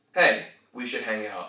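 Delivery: confident, falling statement intonation. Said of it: "And one is a statement".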